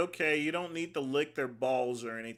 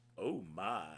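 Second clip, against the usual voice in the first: deep exclamation, pitch dropped way down; 7 semitones lower, 9 dB quieter than usual. Reacting to a supplement bottle name: Sulu voice. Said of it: "let me do the, uh, Sulu, uh, voice".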